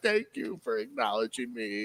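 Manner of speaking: weepy, tearful, overcome, crying voice. Retelling old men at a parliament giving thanks: imitating someone crying.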